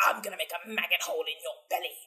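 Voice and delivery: orc character voice. A speaker quotes a line to their cat, quoting an orc. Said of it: "quote the orcs".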